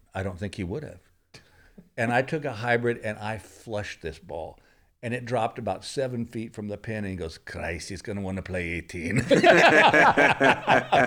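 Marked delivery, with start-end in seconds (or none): 7.3-9.2 horrible put-on Irish accent, low and soft. Retelling what the golf caddy said after the shot landed, in a horrible Irish accent. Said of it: "I do a horrible Irish accent".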